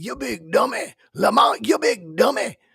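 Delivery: very high, shrill, scratchy, rough, loud holler. Showing the Sanford voice while talking about misappropriating voices: Fred Sanford voice. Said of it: "the Sanford voice".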